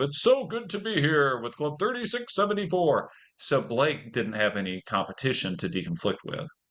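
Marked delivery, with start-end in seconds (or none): 0.0-3.1 high, ceremonial, formal officer-style delivery. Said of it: "district officer hand wave of".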